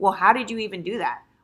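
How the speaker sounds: put-on suspicious, pointed, accusatory tone. Quoting women who question the speaker about her hair: imitating an accusatory tone. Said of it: "they'll try to come with like this accusatory tone".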